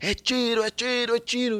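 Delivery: panicked yelling, high-pitched.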